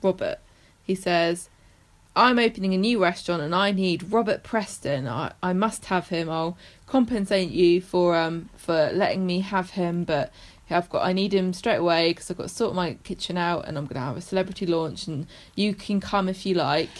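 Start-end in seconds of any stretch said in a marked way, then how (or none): none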